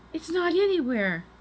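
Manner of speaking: very high, called-out crying exclamation. Annie cries out to Jack when the book they need is missing. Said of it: "cried Annie".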